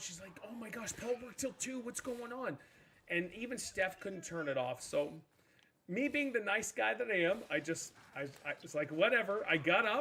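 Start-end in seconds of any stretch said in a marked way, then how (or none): 0.5-2.6 panicked, frantic, rushed, pitched up. Retelling how Steph reacted to an alarm nobody could turn off, imitating Steph freaking out. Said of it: "Steph is freaking out".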